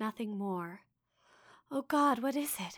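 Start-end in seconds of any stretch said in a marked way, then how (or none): 1.7-2.8 gasping, much higher pitch. The narrator, having heard a distant voice cry her name, asks this gasping. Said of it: "I gasped".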